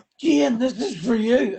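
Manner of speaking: high, called-out shout. Retelling calling up to the penthouse at a gig: imitating own past shout. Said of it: "and I shouted".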